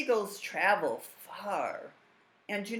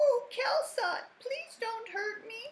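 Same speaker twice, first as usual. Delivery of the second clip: put-on teeny tiny, squeaky, very high mouse voice. A mouse speaks to kelsot in a story, teeny tiny mouse voice. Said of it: "said the mouse in a teeny tiny voice".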